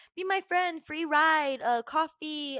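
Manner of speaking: loud, stretched-out hollering. Retelling a man following in his car: imitating a man yelling. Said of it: "yelling out his window".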